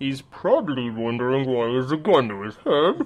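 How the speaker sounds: weird, strange masked villain's voice. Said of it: "you hear this weird voice come out of nowhere".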